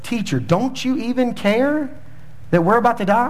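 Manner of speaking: sarcastic, mocking jab. Retelling the disciples in the storm-tossed boat addressing their teacher, mock-sarcastic question. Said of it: "sarcastically go".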